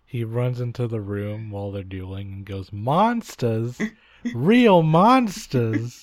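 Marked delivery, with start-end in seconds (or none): 2.7-6.0 put-on loud, high, 1920s New York flapper accent. Retelling what a character says running in during a duel, 1920s new york flapper voice. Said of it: "he talks like a 1920s flapper of New York".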